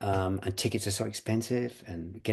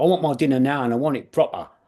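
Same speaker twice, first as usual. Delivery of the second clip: raised, pitched-up voice of a crushed, henpecked little man; 5 semitones higher, 7 dB louder than usual. Retelling a comedy role, the little man his wife crushed: imitating his henpecked husband character. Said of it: "he'd go".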